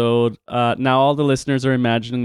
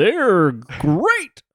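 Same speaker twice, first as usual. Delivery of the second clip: pitched-up cartoon tiger mascot voice; 6 semitones higher than usual. Telling the other speaker they sound like him, the speaker does a Tony the Tiger impression. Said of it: "you sound like Tony the Tiger a little bit".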